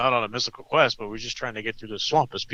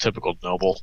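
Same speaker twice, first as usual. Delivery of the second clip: muttered quietly and lower, under the breath; 3 semitones lower than usual. Speaking in character during a game, muttered under the breath. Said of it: "under my breath".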